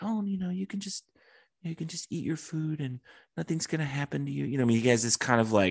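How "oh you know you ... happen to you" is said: put-on calm, soft, high, innocent childlike voice. Describing an actor's villain performance: imitating a calm, childlike, high-pitched voice. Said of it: "calm, almost kind of childlike, high-pitched voice".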